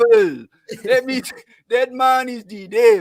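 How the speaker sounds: clumsy fake Haitian accent. Performing a bit for the others on request, in a shitty Haitian accent. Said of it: "in a shitty Haitian accent".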